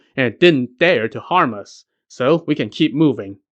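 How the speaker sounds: ordinary delivery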